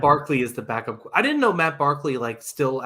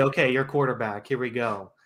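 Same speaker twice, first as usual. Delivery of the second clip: usual speaking voice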